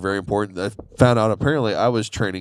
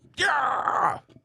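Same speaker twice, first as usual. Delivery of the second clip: put-on energetic preacher-style shout, pitched higher. Imitating a speaker jumping on stage, energetic shout. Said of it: "that's my impression of him when he first jumped on stage".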